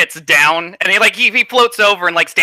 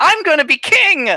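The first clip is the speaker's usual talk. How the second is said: full-volume scream, much higher pitch; 12 semitones higher than usual. A game master voicing a character who circles around, screaming at the top of his lungs. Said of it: "top of his lungs".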